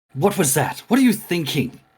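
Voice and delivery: loud, high-pitched voice thrown out to carry. Showing how they'll call someone out so everyone in the van hears, loud voice. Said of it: "I will have a loud voice so anyone in the van can hear it".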